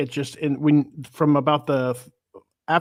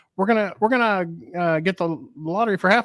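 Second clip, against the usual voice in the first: mock fast talking, much higher pitch; 4 semitones higher than usual. Retelling a platonic friend's suggestion, imitating the friend's fast talk. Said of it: "She talks really fast".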